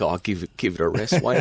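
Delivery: put-on laughing mutter under the breath. Retelling his own past reaction to another man's claim, retelling a laughing mutter. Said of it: "laughing under my breath, going like".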